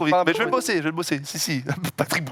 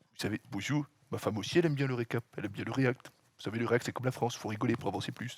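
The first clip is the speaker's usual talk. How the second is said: low, very quiet, hushed put-on voice; 6 semitones lower, 10 dB quieter than usual. Showing the others a little impression after announcing who it is, as a Sarkozy impression. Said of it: "C'est Sarkozy".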